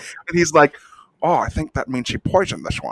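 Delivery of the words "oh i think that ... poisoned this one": put-on screen-villain Scottish accent. Acting out a spy noticing poisoned food: Sean Connery voice. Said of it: "when Sean Connery was both the bad guy".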